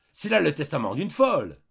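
high cry at full volume. Narrator reads a man who has just stood up, crying out. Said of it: "Il cria".

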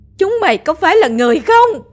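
uncontrolled, very high, shrieking scream. Narrator voices Bà Tình after hurling a bowl at the official's head, screaming. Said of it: "gào lên".

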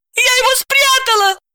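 very high, high-pitched shouted outcry. Accused of planting a pistol, the woman shouts. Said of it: "крикнула Настя".

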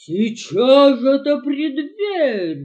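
very loud wolf growl with wild swings. Narrator reads the wolf at the door of Nif-Nif's straw hut, growling. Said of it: "прорычал волк".

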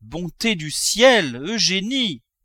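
high, very slow, drawn-out joyful cry. When the father relents, the mother cries out to her daughter with joy. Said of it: "cria la mère en rougissant de joie".

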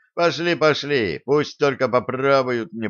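ordinary delivery

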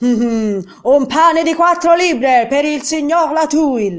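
loud, high, bellowing bawling shout. The baker's wife calls out an order for a customer: bawled. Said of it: "Sbraitò la fornaia".

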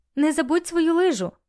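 loud, high-pitched shouting. Lesa calls out to Rik as she throws something to him, shouted. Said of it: "крикнула Леса".

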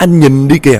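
high, panicked, frightened shout. Narrator voices a wife crying out to her husband in alarm, panicked shout. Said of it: "chị hốt hoảng chị la lên".

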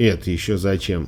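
plain reading voice

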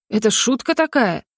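ordinary talk

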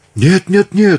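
shrill, very high, horrified scream of terror. An adjunct cuts off the count's orders, screaming in horror. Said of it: "в ужасе закричал Тауберт".

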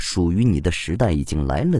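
plain

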